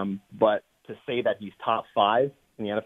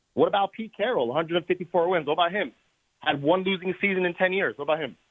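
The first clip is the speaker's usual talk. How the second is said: talking fast, raised voice, much higher in pitch; 8 semitones higher than usual. Arguing against another speaker's list of top NFL coaches, talking fast and raising voice. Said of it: "By talking fast and raising your voice".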